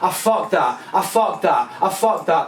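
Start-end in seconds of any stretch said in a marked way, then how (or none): none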